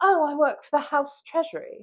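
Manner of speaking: put-on high British accent. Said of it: "she had a British accent".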